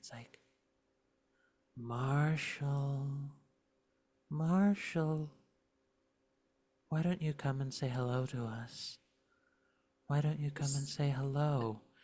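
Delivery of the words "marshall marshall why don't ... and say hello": sweet, coaxing, honeyed, lovely luring voice. A creature outside the wall calls to an unfortunate guard, lovely creature voice. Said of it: "it sounds like the most lovely voice".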